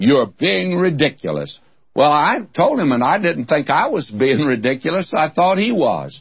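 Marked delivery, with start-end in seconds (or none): 0.0-1.6 imitated disdainful British accent. Repeating what a man told the speaker, in a mock-disdainful british voice. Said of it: "he said it in that British disdainful voice".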